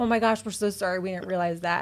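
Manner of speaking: ordinary delivery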